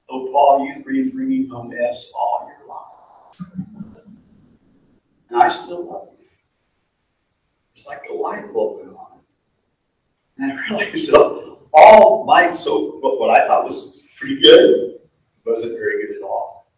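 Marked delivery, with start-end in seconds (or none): 0.1-6.2 put-on soft, gentle voice with a hint of humor. Paul retelling what the Lord said to him, imitating the Lord, gentle and amused. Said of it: "with a hint of humor in his voice".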